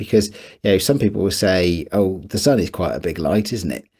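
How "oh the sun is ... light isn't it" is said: ordinary talk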